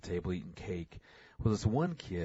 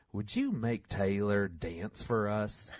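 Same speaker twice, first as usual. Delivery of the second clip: little put-on small-town Arkansas accent; 2 semitones higher than usual. Retelling what a man walked over and asked him: Arkansas accent imitation. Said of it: "in his best little Arkansas voice goes".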